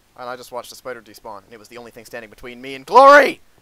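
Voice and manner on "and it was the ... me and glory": loud, excited, blurted outburst. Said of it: "Sorry, I got a little excited".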